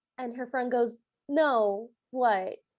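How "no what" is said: put-on flat, unenthusiastic tone. Quoting the friend's reply in a cartoon: imitating an unenthusiastic reply. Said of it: "with not a lot of enthusiasm".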